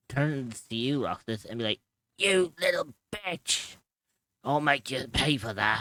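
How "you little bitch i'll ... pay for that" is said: wounded goblin monster voice, mild pained yell. Game master voices a goblin hit by an arrow, yelling in pain at Roxas. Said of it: "the goblin yells in pain".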